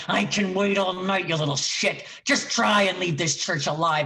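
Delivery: devilish, menacing, threatening voice. Retelling threatening a whimpering man hiding behind a church pew, in a satanic voice. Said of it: "in my most like satanic voice".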